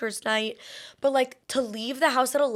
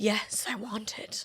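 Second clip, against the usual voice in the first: put-on gasping "yes", quieter and slower; 7 dB quieter than usual. Telling of craving caviar, voicing her hormones, retelling a gasp.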